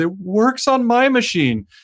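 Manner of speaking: put-on high, slow, whiny crying kid voice. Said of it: "this little kid is crying".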